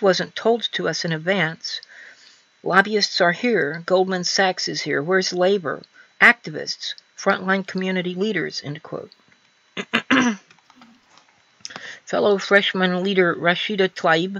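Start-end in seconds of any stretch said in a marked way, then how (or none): none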